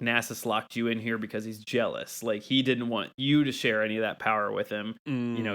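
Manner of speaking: ordinary talk, nothing marked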